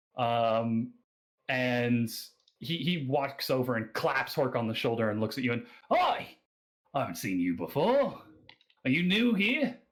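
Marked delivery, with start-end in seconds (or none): 5.9-9.7 put-on animated Australian accent, pitched up. Narrating a scene, a bearded man deep in his cups greets you, in an Australian accent. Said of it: "that's my Australian accent".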